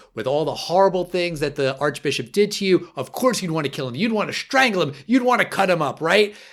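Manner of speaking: mock aggressive, needling tone. Retelling a prosecutor's cross-examination of a defendant: imitating an aggressive provoking questioner. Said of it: "she really lays into him".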